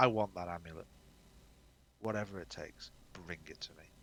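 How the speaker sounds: quiet, hushed, secretive half-whisper. Playing a character, the game master half-whispers to Zook: half-whispering. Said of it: "I'm just going to whisper to him".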